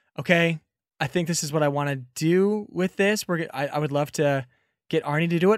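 ordinary talk, nothing marked

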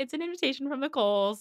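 play-acted giddy, smug, pleased with herself. Recounting a scene where Emma reads a letter; imitating Emma, giddy and smug. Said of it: "getting all giddy and, like, smug".

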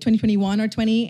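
ordinary delivery

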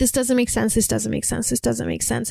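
ordinary talk, nothing marked

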